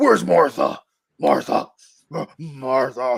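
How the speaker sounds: slow, rough growling voice. Speaker mocks a Batman actor's voiceover line, in a steroid-pumped Batman voice. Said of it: "He sounds like freaking like you know he's hopped up on steroids".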